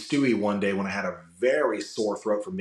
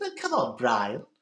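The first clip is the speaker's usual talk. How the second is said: very high-pitched cartoon baby voice; 3 semitones higher than usual. Demonstrating how the character usually sounds, Stewie Griffin voice. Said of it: "normally Stewie's up here".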